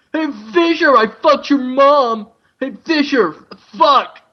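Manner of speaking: high, jeering, taunting battle yell. Imagining how the game's bad guys shout at the hero: imitating bad guys yelling. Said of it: "the bad guys are like".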